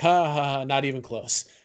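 put-on, fake ha-ha-ha laughter. Retelling a film scene where Thor laughs it off: imitating Thor's fake laugh. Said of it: "he starts laughing like".

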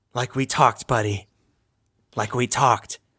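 stage whisper, low. During a dragon fight, a player's character speaks to the companion at their back: half-whispering. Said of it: "I'm going to whisper".

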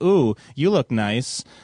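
casual, unbothered, oblivious tone. Mocking a character who seems unfazed after a rescue: imitating Princess Leia acting oblivious. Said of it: "she's fucking sitting there looking like she's like".

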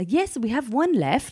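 put-on British accent. Retelling a phone call with a puppy seller: imitating british accent. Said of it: "He was a British guy".

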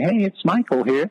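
tiny, squeaky, very high little voice. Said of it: "squeaky little voice saying".

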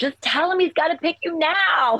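mock very high, urgent, shrill shout. Retelling reading the book like yelling at a movie: imitating screaming at the screen. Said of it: "like I was watching a movie screaming at the screen going".

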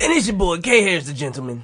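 rough, scratchy, raspy put-on voice. Introducing yourself as K Harris while imitating Kim's raspy voice. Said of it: "I tried to make his voice".

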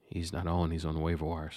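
hushed, whispered speech. Telling listeners about a player in own leagues: whispering. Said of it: "I need to whisper this".

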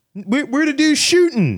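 high, slow, drawn-out, goofy, confused voice.

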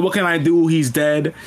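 ordinary delivery

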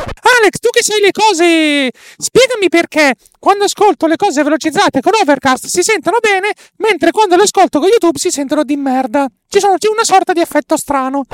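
very high sing-song voice, cose drawn out. Quoting a question from Filippo Strozzi: imitating Filippo Strozzi. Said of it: "utilizzeremo la voce la la la la la per, per indicare Filippo Strozzi".

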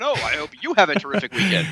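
overeager, sweet politeness.

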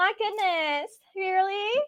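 put-on prissy valley girl voice. Describing how she would react, the speaker puts on a prissy valley girl voice. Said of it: "just very, like, Prissy".

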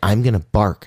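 plain

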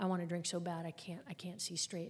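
normal talking voice

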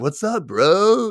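very high, easygoing, laid-back surfer dude voice. Show how the surfer boy pizza guy talks in real life, in a surfer boy voice. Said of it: "he just kind of talks like this".

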